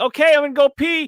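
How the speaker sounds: very high, loud, offhand high-pitched delivery. Retelling what Gina said on stream: imitating Gina. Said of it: "And then going".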